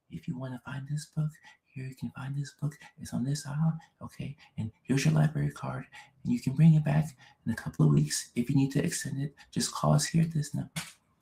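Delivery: soft, hushed, quiet librarian voice. Showing how talkative librarians really talk, in a quiet librarian voice. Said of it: "but they don't talk loud. They talk like this".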